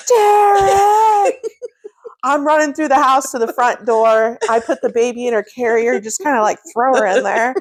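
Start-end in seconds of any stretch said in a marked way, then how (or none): 0.1-1.3 much higher pitched, loud scream. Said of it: "And I'm like".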